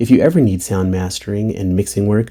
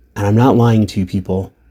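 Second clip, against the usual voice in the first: ordinary delivery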